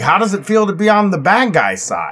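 put-on, swooping voice dripping with sarcasm. Retelling a question once put to the National Guards: imitating own sarcastic question. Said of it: "I asked in a very, uh, sarcastic way".

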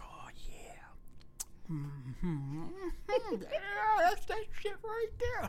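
acted creepy, peeping whisper. Acting out peeking through a door, retelling a creeper whisper. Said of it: "I'm looking through the door like a creeper".

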